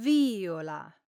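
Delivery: viola with stress on first syllable. Explaining how stress changes a word's meaning: stress on first syllable of viola. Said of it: "pronounced with the accent on the first syllable".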